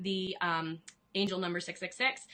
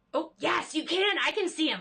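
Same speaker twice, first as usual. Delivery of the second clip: genuinely thrilled, high, loud burst of excitement; 8 semitones higher, 5 dB louder than usual. Reacting just before apologizing for it: real excitement. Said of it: "I just got real excited".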